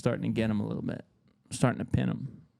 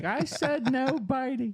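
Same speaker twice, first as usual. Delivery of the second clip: play-acted very high, very slow, drawn-out kid crying. Retelling being bitten by the older brother, imitating a crying, screaming little kid. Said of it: "crying, screaming, little kid".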